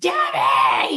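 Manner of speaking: light, mild shout. Retelling how a homeowner yelled at a girl: imitating a man yelling. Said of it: "He's yelling at this girl".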